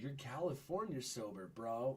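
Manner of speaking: put-on sing-song Valley accent, drawn out, rising endings. Mocking people who call him California sober: imitating a Valley accent. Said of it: "sounds like you're from the fucking valley".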